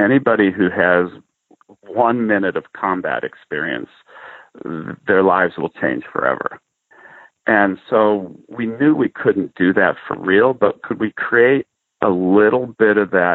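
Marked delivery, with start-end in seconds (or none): none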